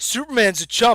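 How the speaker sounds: ordinary talk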